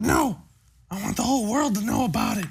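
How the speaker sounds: quiet, hushed speaking voice. Answering why the two are being quiet, speaking quietly. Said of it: "you're gonna have to talk louder".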